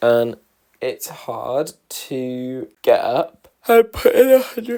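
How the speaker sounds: talking through a yawn. Talking to listeners mid-thought, the speaker is yawning. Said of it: "I don't know why I'm yawning".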